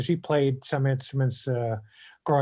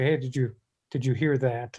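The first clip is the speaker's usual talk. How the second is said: plain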